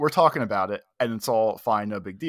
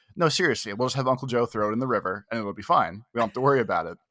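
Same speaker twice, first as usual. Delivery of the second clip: mock deadpan, flat and matter-of-fact. Retelling Graham's reply in front of a lawyer, acting out a deadpan delivery. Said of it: "she just looks at me like deadpan".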